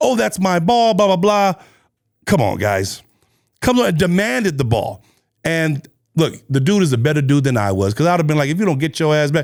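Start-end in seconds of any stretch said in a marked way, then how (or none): 0.0-1.5 put-on yelling in a woman's voice. Retelling a video where a woman demands a man's ball, imitating her yelling. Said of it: "starts yelling like".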